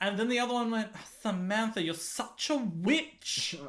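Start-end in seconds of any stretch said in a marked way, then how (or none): 1.2-3.6 put-on English accent like an English girl's. Retelling two english people bickering, quoting the other one; imitating english pronunciation. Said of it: "her pronunciation".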